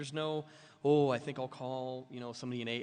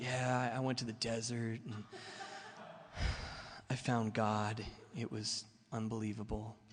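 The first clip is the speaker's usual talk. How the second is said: put-on soft, slow, soft-spoken delivery. Mimicking how he shared when called on, in a mock soft-spoken spiritual voice. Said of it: "I'm talking really soft spoken because that's how spiritual people talk".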